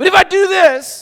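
loud, high, drawn-out call. Showing how tone affects communication: loud voice. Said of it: "offended by that volume".

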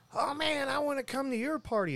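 very high, gravelly chain-smoker voice. Retelling what a cashier said at the counter: imitating a gravelly smoker's voice. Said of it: "in that gravelly, "I smoke two packs of Marlboro Menthols a, a day" kind of voice".

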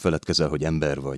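plain

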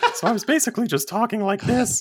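high-pitched falsetto female voice. Showing how they talked during a session, in an attempted woman's voice. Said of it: "I can't really do a woman's voice".

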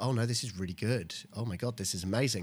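ordinary talk, nothing marked

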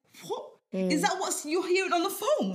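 mock stunned outburst. Retelling how the team leader reacted after walking past and overhearing, acting shocked. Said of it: "he was shocked".

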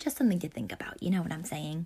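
aside in a whisper.

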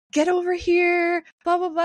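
acted out, high, taunting, goading scream. Retelling how a man screamed at a friend to come over. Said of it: "the guy is screaming at B J".

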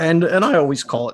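voice breaking up high mid-phrase. Talking about the sky cam in conversation, the speaker's voice is cracking. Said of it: "you hear my voice crack on that?".

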